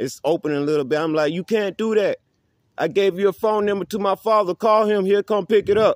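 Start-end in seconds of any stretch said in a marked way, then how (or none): 1.3-6.0 mock high, pleading yell. Retelling pleading with an officer through a cracked window: imitating own past yelling. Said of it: "yelling out the window while it's cracked".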